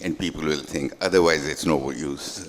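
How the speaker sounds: ordinary talk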